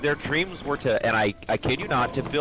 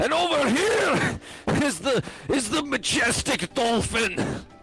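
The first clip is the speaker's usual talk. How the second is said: very high-pitched Scottish accent; 11 semitones higher than usual. Imagining a nature documentary narrator, in a Shrek-sounding Scottish accent. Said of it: "like a Shrek sounding person like a Scot".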